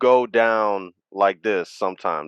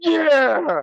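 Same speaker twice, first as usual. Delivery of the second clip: very high, excited yell. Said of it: "He's like".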